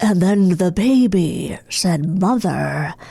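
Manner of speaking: very slow, creepy, stretched-out drawl. Asked to do another impression: James Spader impression. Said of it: "Now let's hear your James Spader".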